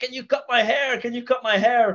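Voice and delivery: high-pitched yell. Retelling how, with one lap to go, they yelled asking for a haircut, retelling own yell. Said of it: "like I was yelling".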